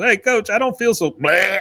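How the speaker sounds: put-on, high-pitched hollering yell. Retelling how a player yelled at the coach: imitating a player yelling. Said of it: "is yelling at the coach".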